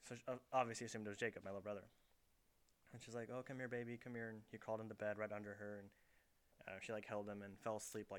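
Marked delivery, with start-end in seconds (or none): none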